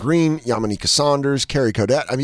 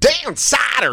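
very high, goofy comic voice; 13 semitones higher than usual. Retelling how a comic repeated the bit: imitating Omar Thompson doing a voice. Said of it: "He'd do that voice".

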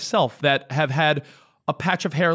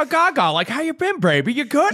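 very high voice like a twenties flapper; 10 semitones higher than usual. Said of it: "you do a great [name]".

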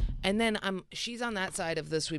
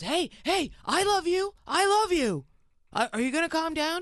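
mock very high, loud shouted voice; 12 semitones higher, 5 dB louder than usual. Retelling how he answers when she screams at him; imitating him yelling back. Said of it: "He yells back".

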